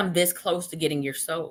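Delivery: normal talking voice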